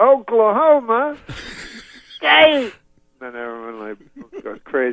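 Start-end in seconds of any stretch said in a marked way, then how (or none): 0.0-2.7 very high, slow, drawn-out stretched call. Retelling a comedian working up a crowd: imitating Bill Cosby saying it slower. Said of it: "And then he says it slower".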